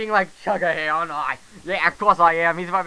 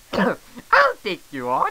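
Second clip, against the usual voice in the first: put-on Italian accent, high, slow, swooping and lilting; 8 semitones higher than usual. Accepting a challenge in a game, repeating the line in Mario accent. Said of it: "That was with the Mario accent".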